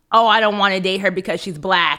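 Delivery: plain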